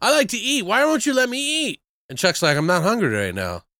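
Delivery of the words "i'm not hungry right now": put-on flat deadpan delivery. Retelling someone's reply to a plea to let them eat, mock-deadpan. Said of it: "it's just so deadpan".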